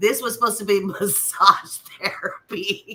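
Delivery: laughing and giggling while talking. Speaker apologizing to the audience for laughing mid-conversation: giggling. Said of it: "I'm sorry I'm giggling".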